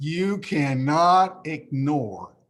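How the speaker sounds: slowed down, word by word, deliberate emphasis. Repeating a point to listeners more slowly, said slower. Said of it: "let me say that slower".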